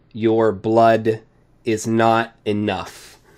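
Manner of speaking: big, booming, resounding voice. Narrating a tabletop scene, a voice from a chest speaks to a player; booming voice. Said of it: "As you hear a booming voice".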